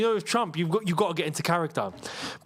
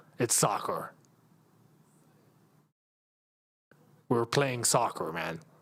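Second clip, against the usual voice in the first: put-on American accent, much lower; 8 semitones lower, 4 dB quieter than usual. Trying out accents and saying soccer the easy way, American accent. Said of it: "The only thing that's easy to say is soccer".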